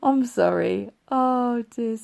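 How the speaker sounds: laughing, speaking through laughter. Podcast host apologizing after a slip in the opening line, laughing while talking. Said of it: "Sorry, I'm laughing because".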